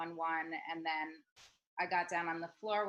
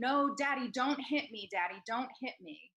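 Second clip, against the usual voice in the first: put-on high, sobbing, crying little boy voice; 6 semitones higher, 3 dB louder than usual. Retelling an injured boy pleading with his father, imitating a crying child. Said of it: "starts crying".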